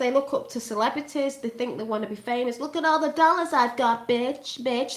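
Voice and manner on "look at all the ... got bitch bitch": put-on young girl's casual, slangy talk. Showing how a young girl talks: imitating how a young girl talks. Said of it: "This is what she talks like".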